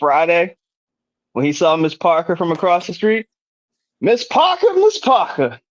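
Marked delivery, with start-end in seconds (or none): 4.0-5.5 very high call-out with swooping, swinging pitch. Doing an impression of a character calling across the street: Bernie Mac impersonation. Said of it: "I do my best, uh, Bernie Mac impersonation".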